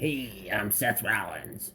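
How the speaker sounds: slow, drawn-out, mocking wrestler voice. Complaining about a wrestler's promo voice, then imitating it: Seth Rollins voice. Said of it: "his voice just kills me".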